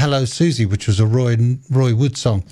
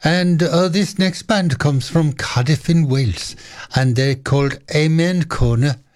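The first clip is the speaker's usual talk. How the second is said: poor, off-the-cuff, put-on Welsh accent; 3 semitones higher than usual. A radio presenter introduces the next band from Cardiff: bad Welsh accent. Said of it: "That's not a very good Welsh accent".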